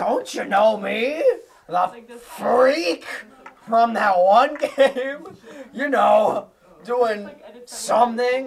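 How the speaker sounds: high, loud, slowed goofy voice.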